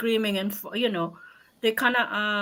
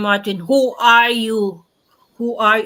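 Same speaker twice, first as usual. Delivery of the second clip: mock abrupt, loud, sudden scream; 6 dB louder than usual. Retelling screaming at a young apprentice: imitating her own scream. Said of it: "and I really scream".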